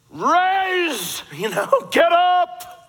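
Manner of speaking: booming, loud, slow godlike voice from on high. Retelling the story, Paul speaks to the hopeful man in a loud God-like voice. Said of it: "speaks in a loud, God-like voice".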